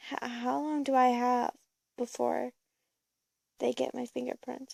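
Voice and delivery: ordinary delivery, nothing marked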